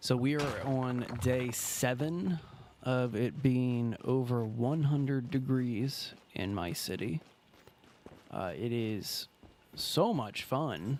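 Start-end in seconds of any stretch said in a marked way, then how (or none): 8.6-11.0 dry, ironic, swooping sarcastic tone. Complaining about day seven over one hundred degrees: sarcastic. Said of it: "I say sarcastically".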